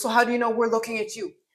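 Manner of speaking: sassy put-on voice. Retelling a comeback from a story with attitude: imitating Dante with attitude. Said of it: "he had, like, attitude".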